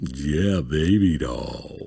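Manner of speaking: very deep, low put-on voice. Told to read in a deep voice, the speaker tries it: very deep low voice. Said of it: "drop it down, get about as low as it can go".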